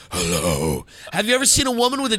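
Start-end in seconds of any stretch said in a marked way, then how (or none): 0.1-0.8 deliberately deep, very low voice. Telling listeners to talk like the speaker, greeting in a deep voice. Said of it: "Deep voice".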